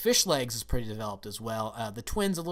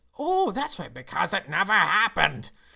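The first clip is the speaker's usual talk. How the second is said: put-on loud, high-pitched, poorly done Scottish accent; 6 semitones higher, 7 dB louder than usual. Voicing a father character in a bad David Tennant Scottish impression. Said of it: "my bad David Tennant Scottish impression".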